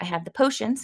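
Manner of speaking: normal talking voice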